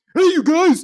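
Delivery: high, loud, hammed-up stupid cartoonish voice. Mimicking how George talks on Rand Nooner: Bullwinkle voice. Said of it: "with his stupid Bullwinkle voice".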